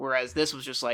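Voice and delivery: ordinary talk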